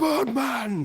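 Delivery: very high-pitched, huge, booming yell. In a game scene, a character yells out a name. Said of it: "What are you yelling?".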